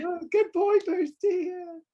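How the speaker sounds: very high, drawn-out, forced fake-calm voice. Retelling praising the dog while getting madder: imitating own fake calm praise while angry. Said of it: "You can see me getting madder and madder".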